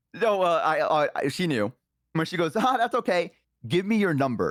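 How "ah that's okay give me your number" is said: play-acted stern, firm, pitched-up, insistent tone. Retelling what a date said the second time: imitating a stern voice. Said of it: "with a little bit more stern of a voice".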